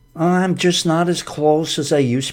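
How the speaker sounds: high, whiny, complaining moan. Acting out a person who is just whining: mock-whiny complaining. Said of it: "kind of whining ... Just whiny".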